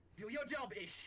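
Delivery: high, loud, scolding shout in a sailor voice.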